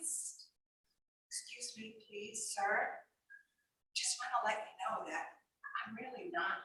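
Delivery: whispered, barely voiced, very quiet. Imagining putting a hand up to speak to a man: whisper. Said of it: "maybe whisper to him".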